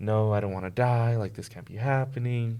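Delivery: upset, tearful voice, crying through the words. Retelling how crying hospital patients pleaded: imitating someone crying. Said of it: "they'd be crying, like".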